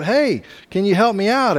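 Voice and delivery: shouting, pitched high. Telling a joke, the man stuck in a hole shouts up to a passing doctor, shouting up for help. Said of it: "the guy in the hole shouts up".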